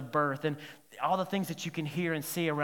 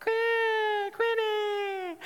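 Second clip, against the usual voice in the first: put-on very high small child's voice calling out. Retelling how the little kids yell out quinn's name: little kids calling out. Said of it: "in the little high school voice".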